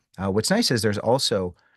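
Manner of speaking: ordinary delivery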